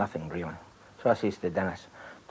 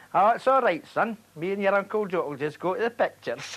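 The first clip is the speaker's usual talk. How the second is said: put-on Scottish Fife accent; 12 semitones higher than usual. Retelling what a father said when invited to a party: imitating dad's strong Fife accent. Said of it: "his right Fife accent".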